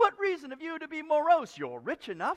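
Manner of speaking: high, loud, cheerful and upbeat tone.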